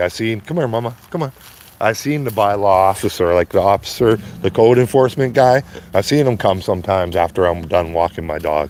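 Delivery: ordinary delivery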